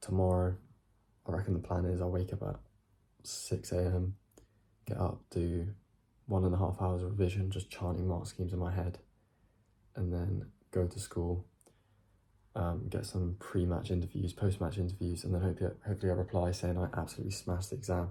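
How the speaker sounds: speaking quietly. Talking late at night without waking the family: speaking quietly. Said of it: "Speaking quietly 'cause it is late".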